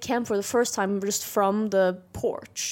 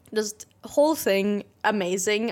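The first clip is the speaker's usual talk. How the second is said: normal talking voice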